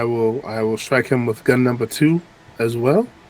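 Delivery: normal talking voice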